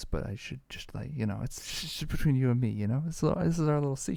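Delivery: hushed, confiding, secretive whispered aside. A guest sharing where to find him online at the show's end, whispering. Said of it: "I don't know why I'm whispering this".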